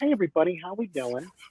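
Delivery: cliched nasal comedian voice. Describing a comic seen live, the speaker mimics his greeting: nasally stand-up comic voice. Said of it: "like nasally comic voice".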